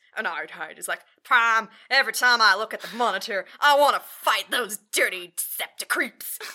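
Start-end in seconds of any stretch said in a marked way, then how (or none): 1.2-6.4 very loud, bellowed Texas drawl. Retelling a moon base scene, Ironhide answering Prime, Ironhide with Texan southern accent. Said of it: "Ironhide has, like, a Texan southern accent".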